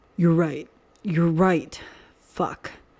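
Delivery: growling voice, emphatic. Remus answers the other man in a tense moment, growling voice with emphasis. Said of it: "with emphasis in his growling voice".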